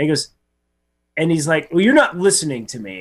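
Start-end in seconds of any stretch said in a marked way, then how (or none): 1.7-3.0 mock worked-up, annoyed, accusing, angry tone. Retelling what a man said near the forklift, imitating someone getting mad. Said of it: "getting all mad".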